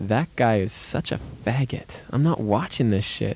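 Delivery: ordinary delivery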